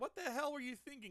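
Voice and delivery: high-pitched mock yelling. Retelling a manga scene where the maintenance crew scolds pilots: imitating someone yelling. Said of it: "the maintenance crew was yelling at them".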